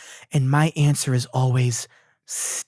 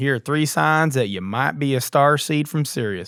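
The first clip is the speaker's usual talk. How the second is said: put-on southern drawl, mock southern accent. Mocking a man from a video by imitating his southern accent. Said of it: "He's like kind of southern".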